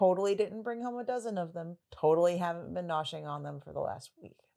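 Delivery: ordinary delivery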